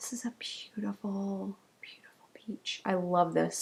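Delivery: soft, hushed whisper, barely above breath. Presenting a pale peach yarn restock, whispering. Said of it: "I don't know why I'm whispering".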